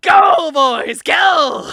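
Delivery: maniacal, high, loud screaming cheer.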